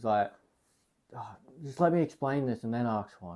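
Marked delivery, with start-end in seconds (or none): 1.2-3.4 play-acted, irritated, impatient teacher voice. Retelling asking the teacher for a pencil during a test, mock-annoyed teacher. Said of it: "she's just annoyed".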